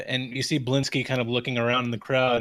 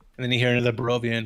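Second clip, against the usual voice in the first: ordinary delivery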